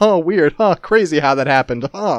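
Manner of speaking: really sarcastic tone, laid on heavy. Retelling own past remark on a show about stolen ideas: imitating own sarcastic remark. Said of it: "get real sarcastic".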